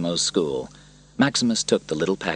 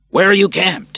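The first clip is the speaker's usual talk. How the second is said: very loud, very high-pitched shout; 13 semitones higher, 8 dB louder than usual. Maximus calls out to Cicero ahead in the crowd, shouted. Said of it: "he shouted to Cicero".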